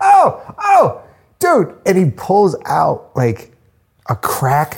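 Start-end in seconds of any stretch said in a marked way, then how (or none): 0.0-1.8 mock, very high, loud shrieking cries. Retelling the lighting person finding something behind a mirror: imitating Jarvis screaming. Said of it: "He's just screaming in the background".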